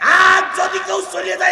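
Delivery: high, loud, mock-menacing shout.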